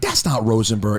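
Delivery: ordinary talk, nothing marked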